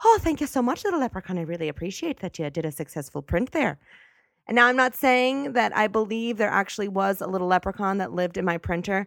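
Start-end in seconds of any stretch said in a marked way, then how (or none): 0.0-3.8 cheery put-on Irish accent. Thanking the little leprechaun in the printer after a print, in an irish accent. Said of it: "in an Irish accent after I printed stuff".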